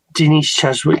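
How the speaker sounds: usual speaking voice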